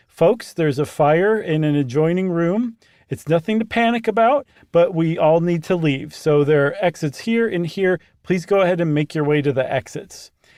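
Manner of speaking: plain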